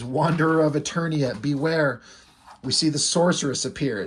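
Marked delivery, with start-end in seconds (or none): none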